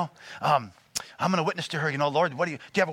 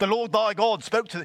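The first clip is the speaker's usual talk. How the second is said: put-on majestic British accent; 5 semitones higher than usual. Describing how God sounds in old religious movies, God voice, majestic British accent. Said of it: "that's a British accent".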